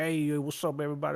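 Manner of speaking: hammed-up, exaggerated put-on cowboy accent. Describing greeting viewers in a saloon pour-cam video, in a cowboy accent. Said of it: "I'm g- doing like a cowboy accent".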